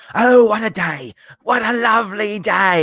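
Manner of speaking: high, shouted, yelled Australian accent. Asked by a viewer to shout a line in an aussie accent, shouted aussie accent. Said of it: "please shout this with an Aussie accent".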